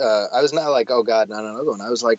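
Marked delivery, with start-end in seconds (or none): none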